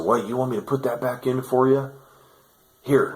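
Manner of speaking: mocking, cruel demon voice. Retelling what the demon said while toying with them: imitating a cocky evil demon. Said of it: "And the demon said".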